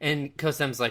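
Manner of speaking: usual speaking voice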